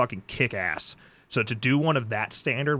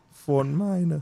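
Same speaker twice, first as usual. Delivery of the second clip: voice cracking. Repeating a name while looking up film credits: voice cracking. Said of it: "why my voice is cracked?".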